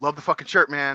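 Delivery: ordinary delivery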